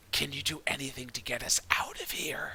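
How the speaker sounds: hissing, hissed stage whisper. Narrating a tabletop game, [name] leans over to Marjorie; loud hiss. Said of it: "just hisses like really loudly".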